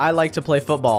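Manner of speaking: ordinary talk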